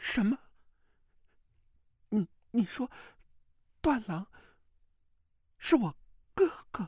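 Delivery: very high, quavering, trembling cry of disbelief. Narrator reads Mu Wanqing reacting in disbelief, in a trembling voice. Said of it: "颤声道".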